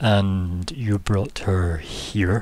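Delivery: slow, low, familiar-sounding villain voice. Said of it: "the voice is very familiar".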